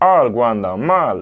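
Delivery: put-on cartoon pig voice. Doing the pig's line from Toy Story for the other speaker: Toy Story pig voice. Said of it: "Entonces sí me sale, escucha".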